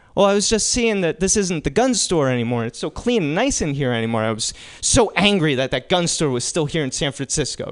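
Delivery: ordinary delivery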